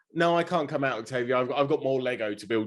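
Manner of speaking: ordinary talk, nothing marked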